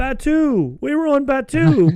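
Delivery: very high, very slow, drawn-out shout. Retelling answering Kylo's question about what planet: retelling shouting back. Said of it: "shouting back".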